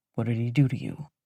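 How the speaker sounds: low, restrained, barely controlled mutter. Reading a character who holds back anger and asks quietly: muttering, barely controlled. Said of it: "keeps it together enough to mutter".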